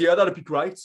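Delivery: put-on Brummie Birmingham accent. Retelling a friend's text reply: imitating Dave in Brummie accent. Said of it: "he texts back in Brummie".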